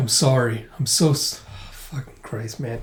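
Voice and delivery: emotionally overwhelmed, breaking off. Retelling a moving scene, the speaker breaks off, emotionally overwhelmed. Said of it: "Just give me a second here".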